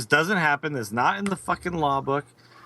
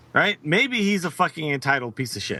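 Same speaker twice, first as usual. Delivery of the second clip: ordinary talk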